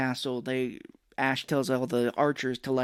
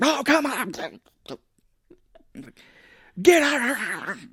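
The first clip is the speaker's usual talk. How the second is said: very high, swooping yelling outburst; 10 semitones higher, 5 dB louder than usual. Retelling a movie scene where a villain yells at his army: Evil Ash yelling. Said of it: "Evil Ash keeps trying to yell at these people".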